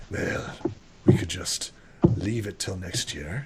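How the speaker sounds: breathy, gruff, rough wolf-like voice. Narrator voices a wolfish figure in an overheard conversation, rough wolfish voice. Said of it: "a wolfish, a rough voice".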